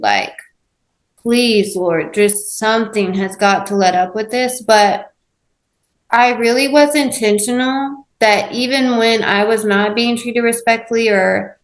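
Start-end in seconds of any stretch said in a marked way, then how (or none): none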